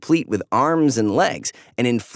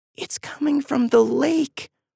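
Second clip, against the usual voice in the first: hushed whisper, much higher, slower; 13 semitones higher than usual. Eva unzips the tent while something whistles outside; whispered. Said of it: "then whispered".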